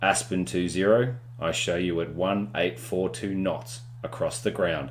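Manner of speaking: plain reading voice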